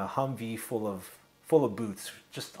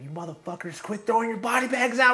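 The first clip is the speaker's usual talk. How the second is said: mock very high, rising holler; 12 semitones higher, 5 dB louder than usual. Retelling the senior line corpsman's order over the mic: imitating someone yelling. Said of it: "he's yelling at us".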